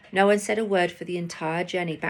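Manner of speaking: ordinary delivery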